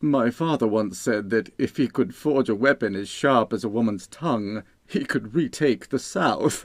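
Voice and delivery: brash, tactless, amused blurted quip with a chuckle. A distinguished guest king jokes to his royal hosts; tactless, chuckling remark. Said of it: "refusing to be baited by the brash monarch. / Asked [name], / [name] blurted tactlessly".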